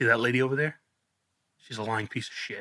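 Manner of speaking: put-on whisper. Speaker retells a nursing home resident whispering in their ear, retelling a whisper. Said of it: "She whispers in my ear".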